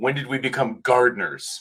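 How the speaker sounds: fed-up, thoroughly frustrated voice. Voicing a character swinging a sword at a bush, in a very frustrated voice. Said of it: "in a very sort of frustrated voice".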